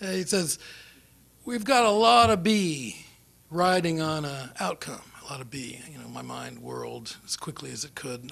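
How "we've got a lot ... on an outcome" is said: put-on Texan accent, laid on heavy. Retelling what a man said to him, in a very texan voice. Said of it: "very sort of Texan voice".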